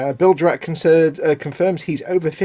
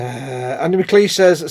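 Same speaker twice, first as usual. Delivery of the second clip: ordinary talk, nothing marked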